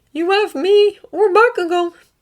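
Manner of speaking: trembling, shaking, very high-pitched, slow voice. Reading a captive's defiant reply to the villain: shaking voice. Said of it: "letting his voice shake like it wants to".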